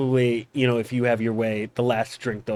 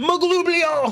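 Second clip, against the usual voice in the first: screaming goblin voice, pitched higher; 3 dB louder than usual. Voicing a goblin screaming a battle word: goblin scream. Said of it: "and then he screams".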